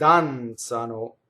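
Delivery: danzano with stress on first syllable dan. Explaining how to pronounce danzano, they dance: stress on first syllable of danzano. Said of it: "the accent is on the first syllable".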